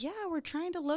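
high eager voice.

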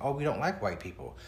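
plain

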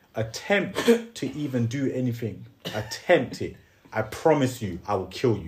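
slow, emotionless, straight-faced deadpan. Retelling threatening someone on a bus with a dead straight face: imitating own deadpan threat, no emotion. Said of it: "Dead straight face, no emotion".

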